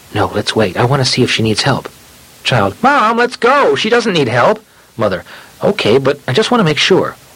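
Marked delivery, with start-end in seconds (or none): 0.2-1.9 hushed, quiet, low-pitched voice kept down. Retelling a mother in a hallway talking to her child, in a hushed voice. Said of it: "in a hushed voice".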